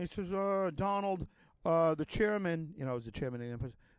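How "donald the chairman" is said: dull, droning voice with halting uhs. Retelling what a lawyer said at a meeting: Schlesinger's droning voice. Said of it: "he has his d-, drony voice".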